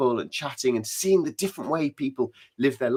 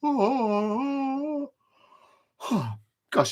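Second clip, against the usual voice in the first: very high words, stretched and drawn out by a yawn; 12 semitones higher, 4 dB quieter than usual. Answering questions from a young audience, yawning. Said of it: "I'm very sorry to be yawning".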